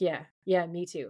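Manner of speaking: put-on reassuring tone, unconvincing. Retelling a scene where Dean agrees: imitating Dean's unconvincing reply. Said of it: "But it's completely unconvincing".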